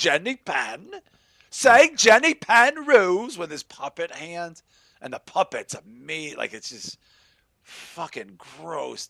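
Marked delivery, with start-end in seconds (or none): 0.0-3.4 put-on shrill, loud, yelled Cockney accent. Retelling a horror film villain's line with his puppet: imitating Lithgow's Cockney accent. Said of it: "so he's like a Cockney".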